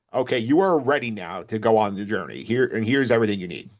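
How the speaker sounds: normal talking voice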